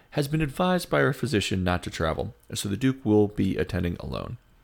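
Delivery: ordinary delivery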